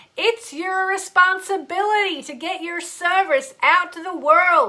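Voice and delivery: fake American accent, done poorly. Speaker says a line again in a bad put-on American accent. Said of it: "putting on an American accent. ... I'm going to do it again. ... Sorry about the bad accent".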